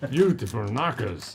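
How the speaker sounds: put-on German accent. Player at a role-play session, told to say it this way, german accent. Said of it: "you have to say it with a German accent".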